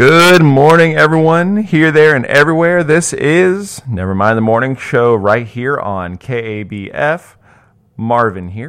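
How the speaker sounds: very loud, high-pitched shouting yell. A radio host greets listeners at the start of the morning show, yelling. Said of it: "I'm sorry for yelling at you".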